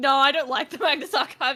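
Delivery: loud, sure, confident, venomous, vitriolic tone. Retelling the other speaker's past words: imitating a confident, vitriolic denial. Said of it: "You said it so confidently and, like, vitriol".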